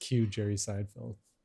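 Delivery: ordinary delivery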